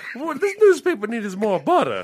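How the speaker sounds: jolly southern lady voice. Joking about Miss Tucker's reflection, speak as a jovial southern lady in a Paula Deen voice. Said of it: "He was a very like jovial rotund southern lady".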